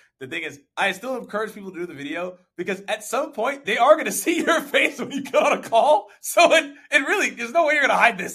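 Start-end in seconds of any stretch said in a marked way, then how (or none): 3.8-8.4 high, loud laughing hard through the words. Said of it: "Why are you laughing so hard?".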